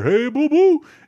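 very high, loud, belted put-on cartoon character voice. Saying everyone can do this impression, then: Yogi Bear voice. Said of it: "everybody can do an impression of Yogi Bear".

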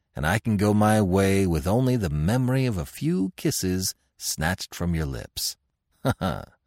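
ordinary delivery

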